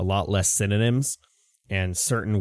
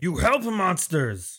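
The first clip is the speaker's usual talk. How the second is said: high, slow yelling lizard creature voice. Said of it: "he's like".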